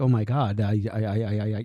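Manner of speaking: slow, put-on panicked stammer, stuck on I. Retelling how an apprentice reacted after a client died: imitating someone freaking out. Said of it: "she's, like, freaking out".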